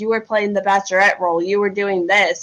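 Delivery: ordinary delivery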